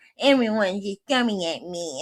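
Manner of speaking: put-on, complaining whine of a man. Describing how Kyle turns to a baby when drinking: imitating Kyle whining. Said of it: "he's just whining".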